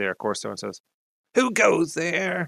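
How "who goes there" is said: piping, high-pitched nasal voice. Game master voices a figure in the darkness challenging a player: high-pitched nasal voice. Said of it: "a high-pitched nasal voice comes out of the darkness".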